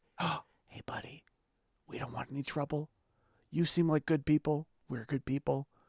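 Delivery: very quiet, hushed, soft whisper. Narrating the game, the speaker voices the Keystone whispering a message: whispering. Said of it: "the message he whispers is".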